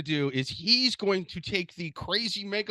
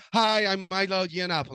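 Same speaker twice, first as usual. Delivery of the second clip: put-on high-pitched feminine voice. Imitating a person's high pitched feminine voice while describing him. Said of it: "a very high pitched feminine".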